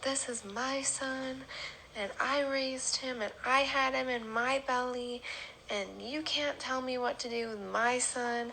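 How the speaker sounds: mild, heated holler. Recounting a woman who refused to leave the house, retelling her hollering. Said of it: "she started hollering".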